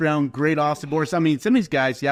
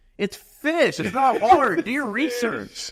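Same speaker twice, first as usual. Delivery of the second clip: very high, shrill, drawn-out scream; 10 semitones higher than usual. Retelling what was screamed at tv announcers: imitating own screaming at the tv. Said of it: "And I'm screaming at the T V".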